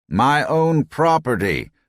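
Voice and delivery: put-on thin, high-pitched, nasal, whining old man voice. Narrator voicing the old man in the windbreaker, high-pitched, nasal voice. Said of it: "said in a high-pitched, nasal voice".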